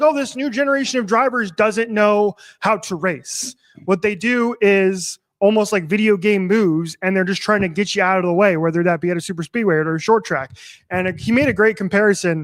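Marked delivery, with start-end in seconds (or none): none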